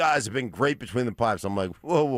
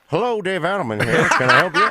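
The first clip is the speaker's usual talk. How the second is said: very high, very loud talk from one mouth corner; 10 semitones higher, 9 dB louder than usual. Imitating the coach answering a phone call: talking out of the side of mouth. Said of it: "Talking out of the side of his mouth like that".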